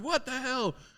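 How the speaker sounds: play-acted, very high-pitched, startled screaming yell. Retelling a man who yelled from his house at the car: imitating a man yelling excitedly. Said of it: "he's just yelling and screaming".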